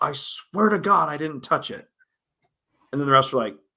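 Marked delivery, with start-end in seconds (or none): 0.0-1.9 acted high-pitched yell. Retelling a player getting up after a dig: imitating someone yelling. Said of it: "she, like, yells".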